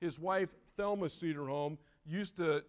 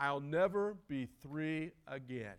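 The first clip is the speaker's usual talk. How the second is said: put-on sad tone, lower pitch; 3 semitones lower than usual. A grandparent quotes a grandson's remark, retelling a remark said sadly. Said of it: "he said sadly".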